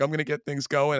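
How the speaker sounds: tearful voice, audibly crying while speaking. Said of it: "through the tears".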